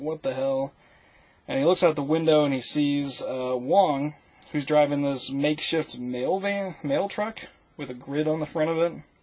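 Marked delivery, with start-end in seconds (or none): 0.0-0.7 put-on panicked voice, freaking out. Retelling a character being chased by cars: imitating someone freaking out. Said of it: "he's just freaking out".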